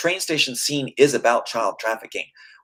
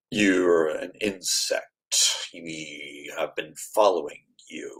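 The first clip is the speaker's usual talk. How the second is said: very deep, slow, soft voice, "we" drawn out; 8 semitones lower, 7 dB quieter than usual. Demonstrating how a film character talks, in a slow, deep Agent Smith voice. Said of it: "why is he talking so slow and deep?".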